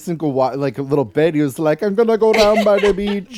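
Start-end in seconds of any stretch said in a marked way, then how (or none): 1.8-3.4 high, loud, drifting put-on Jamaican accent. Imitating a character's accent slipping toward Jamaican: Eric's drifting Jamaican accent. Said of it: "Maybe even Jamaican".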